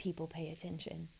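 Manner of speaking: very low, whispered voice. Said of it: "I'm gonna talk in a very low voice".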